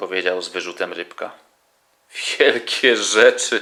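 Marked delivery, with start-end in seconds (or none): 2.4-3.6 loud, words spoken through laughter. Dad answers the fish, who scolded him for breaking a flowerpot, laughing. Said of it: "zaśmiał się tatuś".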